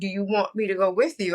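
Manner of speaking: plain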